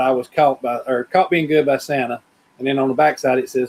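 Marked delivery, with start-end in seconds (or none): none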